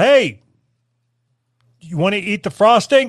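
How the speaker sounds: imitated yell. Retelling calling a daughter in to taste the lard: imitating own yell. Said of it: "I yelled".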